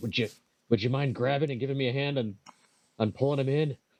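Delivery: slightly frustrated, a bit exasperated tone. Player voicing their character, asking Corin for help, slightly frustrated. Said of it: "a bit of a frustrated voice".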